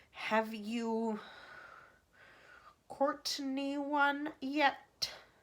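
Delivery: icy, frosty, very slow, drawn out word by word. A woman repeats the president's question to the chief spy, in an icy voice. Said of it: "said Miss Tibbs in an icy voice".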